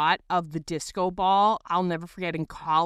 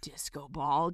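mock contempt, lower pitch and quieter; 4 semitones lower, 8 dB quieter than usual. Speaker recalls reacting to a Facebook status, retelling with mock contempt. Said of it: "just with such contempt".

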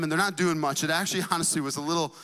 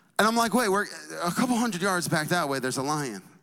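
ordinary talk, nothing marked

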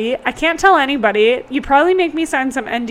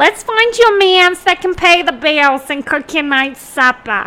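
put-on New Jersey accent; 3 semitones higher, 3 dB louder than usual. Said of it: "I always picture moms with the New Jersey accent".

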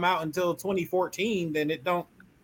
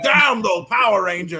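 loud, over-the-top eighties cartoon villain cry; 3 semitones higher, 7 dB louder than usual. Describing a villain who plots in his lair: eighties cartoon villain voice. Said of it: "he's like an eighties villain".

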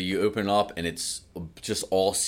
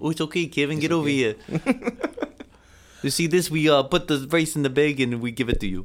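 put-on Spanish accent on English, pitched high; 8 semitones higher, 4 dB louder than usual. Improvising a scene in an accent another speaker suggested: put-on Spanish accent. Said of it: "you could just have like a Spanish accent".

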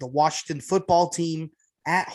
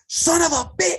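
mock very high-pitched shriek, cut off; 12 semitones higher, 3 dB louder than usual. Retelling a reaction to a scoring throw while someone napped: retelling own scream. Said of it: "started screaming".

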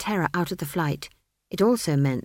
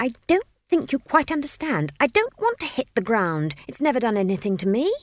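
exasperated berating tone, higher; 5 semitones higher than usual. Reading a story aloud, a child berating her elder: exasperated scolding voice. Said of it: "in the exasperated and remarkably adult voice".

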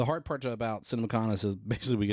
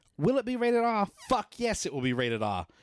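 very high, aggressively British put-on accent; 11 semitones higher than usual. Retelling a man coming up on screen before a clip, Aaron Taylor-Johnson British impression. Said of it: "And then he goes".

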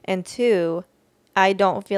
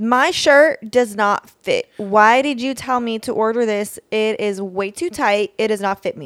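acted irate voice, higher and louder; 3 semitones higher, 6 dB louder than usual. Playing an angry customer phoning a clothing store in a role play: acting an angry customer. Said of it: "it's an angry customer".

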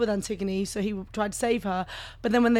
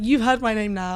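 ordinary talk

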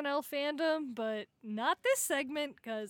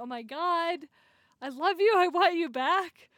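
put-on emotional begging, higher and louder; 4 semitones higher, 7 dB louder than usual. Retelling a sketch character begging his girlfriend back: imitating an emotional plea. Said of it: "he was so, like, emotional".

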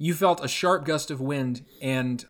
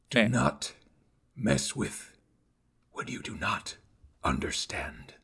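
hushed, scornful, contemptuous put-on beast voice; 5 semitones lower, 6 dB quieter than usual. Voicing a creature in a tabletop game: hairless werewolf-like creature voice. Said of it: "So picture like a hairless werewolf, essentially. This thing has like sharp teeth, this just like scrunched up grizzled face that looks like it's made out of pure anger. Next to all these sharp teeth and everything else, and this".

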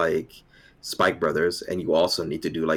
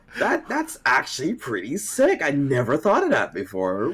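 high, slow, overly sarcastic tone. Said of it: "as sarcastic as possible".

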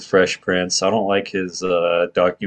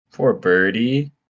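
usual speaking voice

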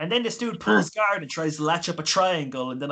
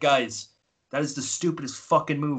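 mock dry, straight-faced, blunt deadpan. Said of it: "I said to them deadpan".

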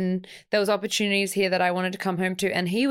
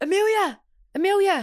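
clumsy put-on Scottish accent, pitched very high; 11 semitones higher, 3 dB louder than usual. Friends discussing Khan's accent, trying to imitate him, imitating Khan's accent. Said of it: "that's not even how he sounds".

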